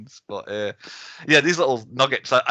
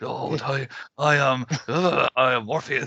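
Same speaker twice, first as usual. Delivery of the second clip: odd, very slow, drawn-out, unnatural voice. Imitating how the main actor in a show talks: imitating an actor's strange voice. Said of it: "him talking, strange voice".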